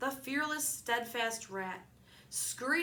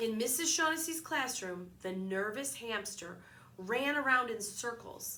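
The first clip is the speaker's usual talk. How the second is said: plain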